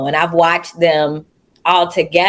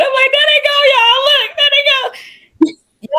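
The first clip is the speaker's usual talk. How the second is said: thrilled, very high, excited call-out. Retelling watching the performers come out: retelling own excited words. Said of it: "I'm all excited".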